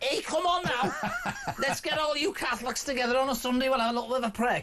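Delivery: swooping Liverpool Scouse accent. Imagining a British Pope, the speaker plays a Scouse cardinal in a Scouse accent. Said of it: "They're trying to get me to stop doing this accent".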